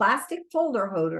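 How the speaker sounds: ordinary delivery, nothing marked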